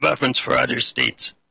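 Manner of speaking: words pushed through a failing voice.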